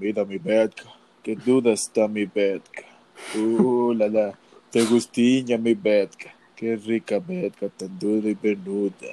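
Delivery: very low, slow, seductive, sensual voice. Retelling what Zagre said in some videos, imitating Zagre's sensual voice. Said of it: "con una voz sensual".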